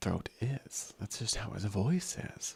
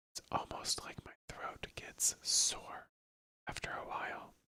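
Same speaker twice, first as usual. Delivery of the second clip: soft, breathy, breath-heavy whisper. Telling viewers how whispering affects the throat, whispering. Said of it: "when I'm whispering like this".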